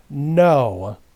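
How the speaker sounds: firm, loud, with "no" drawn out. The Admiral answers Ari's question at the table; firm exclamation. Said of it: "the Admiral firmly exclaims".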